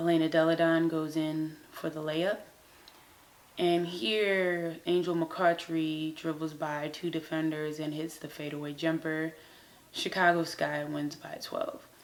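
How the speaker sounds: bored, flat sportscaster monotone, drawn out in places. Imitating a personality going through highlights: imitating an unenthusiastic highlights host. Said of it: "going through our highlights like this ... there's no enthusiasm".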